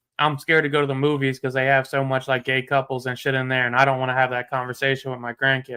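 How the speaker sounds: ordinary talk, nothing marked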